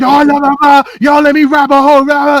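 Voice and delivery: put-on drunken yell. Retelling a drunk man in a club talking in the ear: imitating a drunk guy yelling. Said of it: "yelling with the drunk hot breath".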